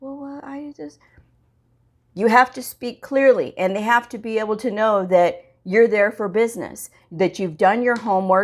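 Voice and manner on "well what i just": hushed, halting, soft, high nervous mumbling. Showing how nervous coders talk to a provider: imitating nervous mumbling. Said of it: "they start to talk like this".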